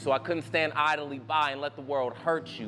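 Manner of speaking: plain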